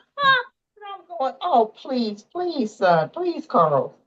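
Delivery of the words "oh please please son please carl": put-on upset, pleading, begging tone. Retelling begging a son in the exam room: retelling own upset pleading. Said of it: "I'm getting upset that he's doing this".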